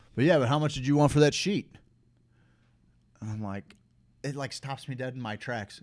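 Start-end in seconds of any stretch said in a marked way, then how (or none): 0.2-1.8 loud, booming, carefree, nonchalant casual tone. Retelling what a lone gambler asked out loud: imitating a loud, nonchalant man. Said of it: "Very nonchalant, very loud".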